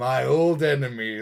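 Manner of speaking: eager, knowing tone. Contrasting how the game character greets an enemy: imitating Imperius's nodding greeting tone. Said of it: "almost a head nod".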